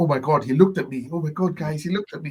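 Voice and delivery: awed, appreciative, admiring, starstruck female gushing. Retelling what the second one says about Superman, imitating an appreciative female voice. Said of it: "quite female and appreciative".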